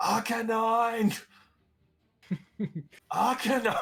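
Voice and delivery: very high, loud, wolfish calling yell. In a game, calling out after moving up a bit: yelling in a wolfy voice. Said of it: "yell out in a very wolfy voice".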